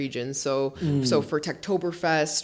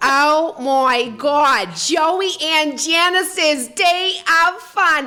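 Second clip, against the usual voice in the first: put-on nasal sitcom voice, higher and louder; 13 semitones higher, 9 dB louder than usual. Showing others an impression, asked to hear it: Fran Drescher and Janice voice. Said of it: "a disturbingly accurate".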